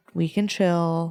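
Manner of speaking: soothing, meditation-style voice. Showing the voice to use when telling someone to take a deep breath, calm meditation voice. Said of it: "your meditation voice of like".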